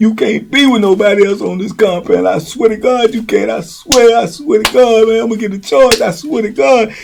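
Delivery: high, frantic, jealous, pleading rage. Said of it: "he going off on him".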